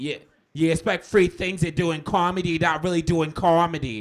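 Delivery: very loud, high, shrill put-on voice. Retelling what Boston comics said, in a Bill Burr impression. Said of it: "that's my Bill Burr impression".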